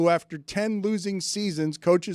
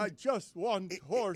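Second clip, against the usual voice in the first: soft, put-on voice, on the verge of tears; 8 dB quieter than usual. Discussing Jokic on a panel, repeating the limited fake Jokic impression. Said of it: "my limited fake Jokic".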